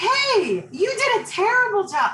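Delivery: very high, slow, drawn-out angry voice. Demonstrating how giving feedback can come across wrongly, mock-angry feedback. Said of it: "like I'm always mad".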